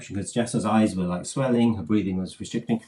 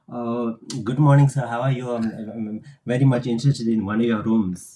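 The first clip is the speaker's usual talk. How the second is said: English in a put-on Indian accent; 2 semitones higher than usual. Retelling calling up to book a room, speaking English with an Indian accent. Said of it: "I was speaking English with a Indian accent".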